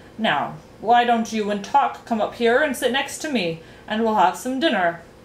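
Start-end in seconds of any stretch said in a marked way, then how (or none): none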